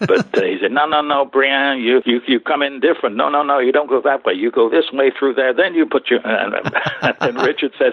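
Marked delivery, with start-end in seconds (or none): 0.7-5.5 put-on male Italian accent, pitched higher. Retelling a lunch conversation, the speaker imitates Nino in his Italian accent. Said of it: "in his Italian accent".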